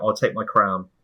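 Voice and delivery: ordinary talk, nothing marked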